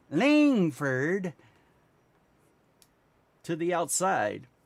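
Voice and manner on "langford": emphatic, heavy stress on Langford. Calling out someone going to the outside: emphasis on langford. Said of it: "I am saying his name with emphasis".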